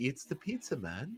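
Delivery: fake, put-on Irish brogue. Acting out an imagined visitor at the door: put-on Irish accent. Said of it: "just in an Irish accent".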